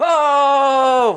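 high, loud, excited exclamation.

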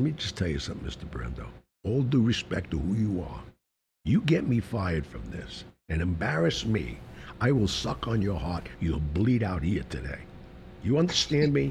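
hushed, whispery voice, kept close. Retelling what they said right to his face, in a whispery voice. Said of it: "in a whispery voice".

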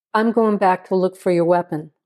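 plain reading voice

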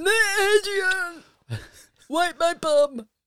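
put-on loud, high-pitched Philadelphia boxer accent. Asked to say a name properly and do the accent, in a Rocky accent. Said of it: "Do the accent".

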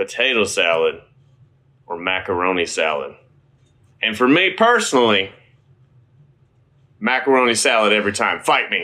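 strong Southern accent out in full force. Speaker choosing between side dishes, in a strong southern accent. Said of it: "Dan's southern accent is coming out in force".

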